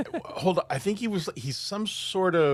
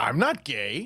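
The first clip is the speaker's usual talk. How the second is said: irritated, angry, sharp retort-like delivery; 4 semitones lower than usual. Retelling a gang leader answering a reporter: imitating an angry reply. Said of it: "with this angry face".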